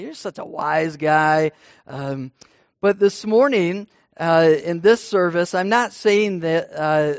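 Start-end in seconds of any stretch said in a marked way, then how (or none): 0.0-1.5 put-on sarcastic tone. Showing how people say it to someone: imitating a sarcastic tone. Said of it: "in a sarcastic way".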